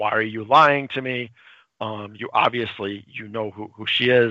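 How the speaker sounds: normal talking voice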